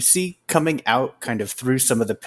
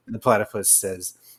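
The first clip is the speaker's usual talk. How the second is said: ordinary talk, nothing marked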